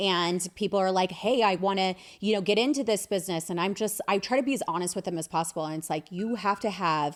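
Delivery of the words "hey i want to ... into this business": ordinary delivery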